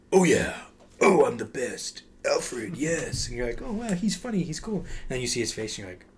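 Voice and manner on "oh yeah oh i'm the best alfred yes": each word dragged out, said loud. Show how a voice actor sounds when he's playing Lego Batman, in a Lego Batman voice. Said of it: "when he's playing Lego Batman. He's like".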